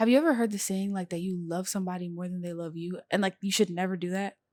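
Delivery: whispering. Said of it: "why did you start whispering?".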